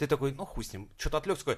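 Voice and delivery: ordinary delivery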